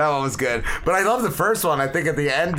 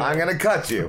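normal talking voice

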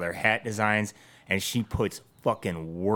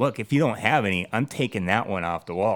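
ordinary talk, nothing marked

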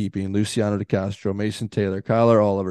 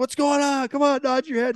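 play-acted, very high, shrill yelling. Recounting what the shoot boss yelled at him: retelling a yell. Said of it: "he starts yelling at me".

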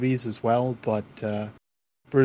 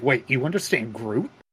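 incredulous, disbelieving character voice. Retelling a movie scene as Rocket talking to Thor: Rocket voice. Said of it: "you sound just like Rocket".

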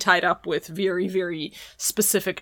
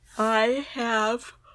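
speaking mid-yawn, higher pitch; 4 semitones higher than usual. Answering whether they have seen a film, yawning while talking. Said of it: "That was a mid yawn".

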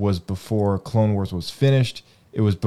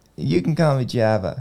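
put-on babyish little-kid voice; 4 semitones higher than usual. Quoting a cartoon character's line: imitating in a toddler-like voice. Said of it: "You sound like a toddler".

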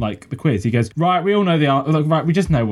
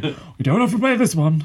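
put-on Northern English accent, pitched up; 5 semitones higher than usual. Recounting a quiz show, the speaker quotes Danny Dyer's line in a Northern accent. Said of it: "I don't know why I'm doing a Northern accent".

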